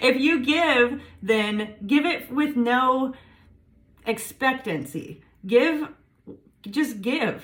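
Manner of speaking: tearful, voice cracking. Speaker advising listeners, crying while speaking. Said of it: "I'm crying".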